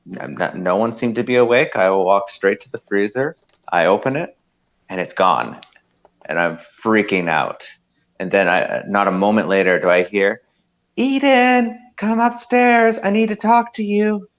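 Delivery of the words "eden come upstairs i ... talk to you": very high, female-sounding woman's voice. Retelling being called upstairs early one morning, imitating a woman's voice. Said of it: "I know I have to work on my women voice".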